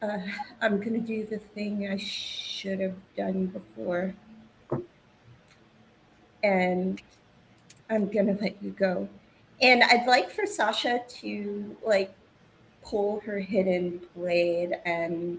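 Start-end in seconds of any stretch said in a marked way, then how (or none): 0.0-9.1 hushed, whispered voice. Player voicing their character speaking into a man's ear, whispering. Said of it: "she's going to like whisper in his ear".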